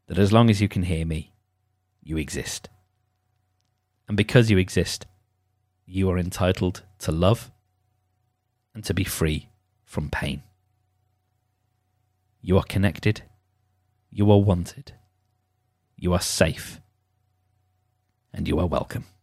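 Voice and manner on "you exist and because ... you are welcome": sincere, earnest, best-effort tone. Reminding listeners at the close of the session: best reminding voice. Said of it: "in my best reminding voice".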